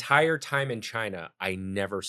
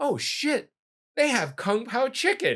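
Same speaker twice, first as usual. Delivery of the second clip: very high, swooping, super-excited outburst; 14 semitones higher, 3 dB louder than usual. Retelling a kid spotting Kung Pao chicken on the menu: imitating someone super excited. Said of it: "he was super excited".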